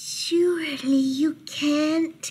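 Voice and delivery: tiniest possible high little voice. Narrator reading a character hiding in a dark closet corner, tiniest possible voice. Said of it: "said in the tiniest possible voice".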